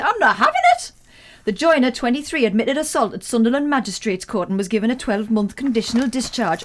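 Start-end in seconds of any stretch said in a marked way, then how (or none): 0.0-0.9 put-on Geordie accent, higher and louder. Acting out a line from a news story about Sunderland: put-on Geordie accent. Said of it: "I do like a Geordie voice".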